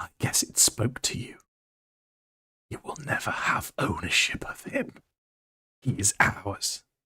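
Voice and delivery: furious, angry, breathy whisper. Voicing a character speaking to Mephiston after the lady is knocked out: angry. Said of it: "she's just angry".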